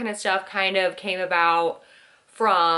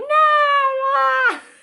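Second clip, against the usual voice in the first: very high shriek, ah drawn out; 6 dB louder than usual. Retelling being tickled in bed as a child: imitating a childhood scream. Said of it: "I would just scream".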